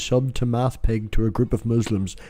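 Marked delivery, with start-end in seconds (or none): none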